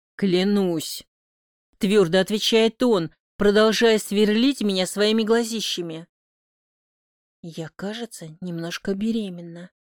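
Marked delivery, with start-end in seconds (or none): 7.4-9.7 soft, hushed half-whisper under the breath. First-person narrator reads her own line to Matvey, half-whispered. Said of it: "Шепчу и опуская голову".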